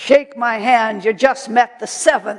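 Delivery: play-acted, large, full-bodied booming voice. Retelling what a man out in the forest said, in a big voice. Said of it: "in this big voice".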